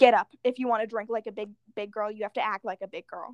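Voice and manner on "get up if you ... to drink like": usual speaking voice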